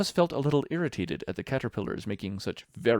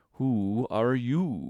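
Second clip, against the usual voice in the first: drowsy, languid, sleepy drawl, stretched out. Narrator reads the Caterpillar addressing Alice: languid, sleepy Caterpillar voice. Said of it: "addressed her in a languid, sleepy voice".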